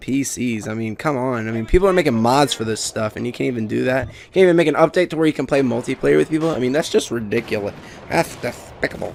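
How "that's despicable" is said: clumsy, breathy, whispered bad cartoon duck voice. Ranting about a game lacking multiplayer, blurting a bad Daffy Duck impression. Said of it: "That was bad Daffy Duck impression".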